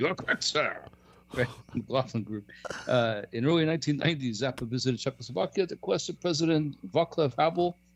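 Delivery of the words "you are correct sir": acted television host voice. Telling someone they are correct, done in the Crossfire voice. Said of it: "Let me say it in the, in the crossfire voice".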